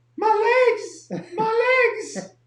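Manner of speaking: shrill, very high-pitched, very loud cry. The speaker retells arriving after hardcore workouts, retelling in a high-pitched voice. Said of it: "high pitched".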